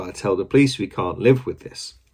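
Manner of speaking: plain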